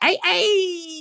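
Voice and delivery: tiny, very high squeaky voice, hey drawn out. Speaker greets in the little voice he says he loves doing. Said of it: "the little voice that I did".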